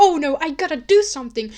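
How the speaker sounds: loud, alarmed, urgent, panicked worried cry. Retelling a plot where a girl sees a kid lured away: acting out panic. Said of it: "she gets panicked and she's like".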